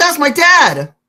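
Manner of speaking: very high-pitched, shrill shout. Acting out a yell across a room to a character: yelling in character. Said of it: "I yell".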